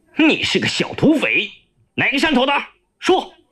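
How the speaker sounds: harsh, sharp, rising barked shout. The chief of staff grabs Yaoliu by the collar and shouts sharply. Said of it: "突然抓住幺六的衣领喝道".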